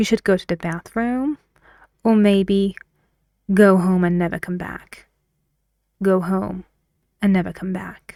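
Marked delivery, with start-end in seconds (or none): 0.0-1.4 voice climbs at the end of bathroom. Demonstrating the first option before the word 'or': rise on 'bathroom'. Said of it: "rising before the word or".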